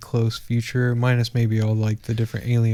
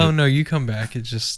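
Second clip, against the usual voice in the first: usual speaking voice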